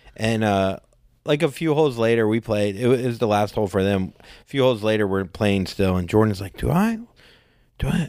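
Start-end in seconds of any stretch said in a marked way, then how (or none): 6.6-8.1 mock whisper, higher. Retelling what Jordan asked on the golf course: imitating a whisper. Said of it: "whispering to me".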